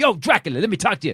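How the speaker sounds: put-on, booming, brash, loud, high, aggressive call-out. Retelling how a guy walked up aggressively, imitating his aggressive voice. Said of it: "Even his voice changed".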